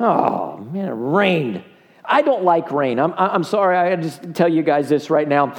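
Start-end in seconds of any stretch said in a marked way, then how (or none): 0.0-3.0 play-acted very slow, low, drawn-out moping grumble. Retelling own complaint on seeing the flooded yard: imitating own complaining. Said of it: "I'm a complainer".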